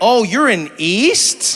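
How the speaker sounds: very slow, stretched, lingering, drawn-out words. Showing how people say east: imitating people drawing out east. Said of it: "people draw it out".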